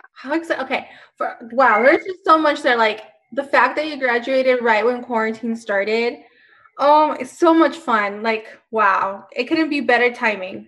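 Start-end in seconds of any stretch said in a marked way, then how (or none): 7.2-10.5 sarcastic, ironic tone meaning the opposite. Answering a guest who graduated as quarantine started: sarcastic. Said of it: "I'm being sarcastic".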